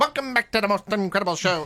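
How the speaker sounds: put-on 1950s-60s old-time radio announcer style. Imitating how show hosts talked in the fifties and sixties: 1950s-60s announcer style. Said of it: "Remember, they used to talk like that".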